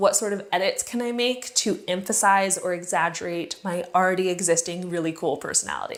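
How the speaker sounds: plain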